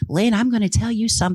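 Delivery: imitated female voice. Retell what she said to Lynn when you got to talking, in her Loretta voice. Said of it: "she says to me in her Loretta voice".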